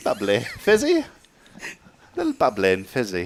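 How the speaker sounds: horrible put-on British accent. Offered tea in a role-play, answering how they like their gum: bad fake British accent. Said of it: "my accent's horrible".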